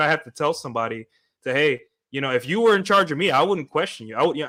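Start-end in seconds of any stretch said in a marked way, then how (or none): none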